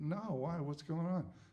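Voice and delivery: plain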